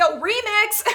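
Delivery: playful, high-pitched yelling.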